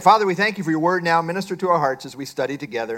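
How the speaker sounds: fast, rattled off like an auctioneer.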